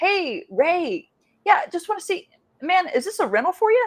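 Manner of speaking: relaxed, easygoing, casual, light-pitched tone. Demonstrating a more casual way to ask a stranger on the phone, casual tone. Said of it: "you need to be more casual".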